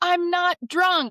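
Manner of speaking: put-on scream, very high, loud, blurted out. Retelling getting up after falling over at the park: retelling own scream. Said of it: "I pop back up and I scream".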